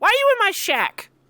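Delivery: put-on tiny, very high, squeaky little voice. Retelling a scene, acting out someone with a little squeaky voice. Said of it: "a little squeaky voice that go".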